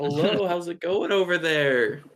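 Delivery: high voice calling out, projected as across distance. Planning to make themselves known before getting too close, shouting out a greeting. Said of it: "I kind of shout out".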